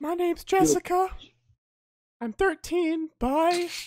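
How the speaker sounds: voice cracking partway through. Posing to friends as a 13-year-old named Jessica, voice cracking. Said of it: "The voice crack made it so much better".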